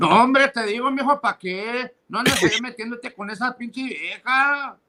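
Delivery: put-on high Mexican-accented uncle voice. Doing an impression of an uncle for another speaker: imitating an uncle. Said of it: "my tío Miguel".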